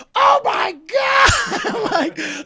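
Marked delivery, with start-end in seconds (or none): 0.2-1.3 high, loud, slow crowd shout. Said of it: "the whole crowd was like".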